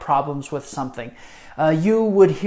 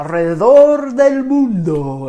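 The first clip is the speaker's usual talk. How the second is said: grand, loud, big game-show announcer voice; 4 semitones higher, 7 dB louder than usual. Speaker naming a favorite Spanish-class game, in a big Sábado Gigante voice. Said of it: "that big Sábado Gigante voice".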